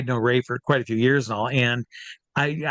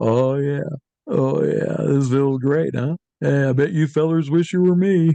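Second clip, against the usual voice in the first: creepy, pleased, relishing stage hypnotist voice; 2 semitones higher, 3 dB louder than usual. Retelling what the hypnotist said into the mic: imitating the hypnotist. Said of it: "And he goes".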